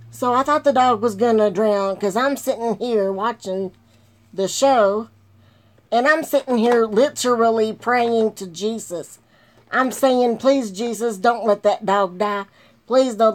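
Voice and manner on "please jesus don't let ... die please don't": mock-tearful, fake-crying pleading tone. Recounting praying for a dog on a show, retelling a tearful prayer. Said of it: "I'm sitting here bawling my eyes out".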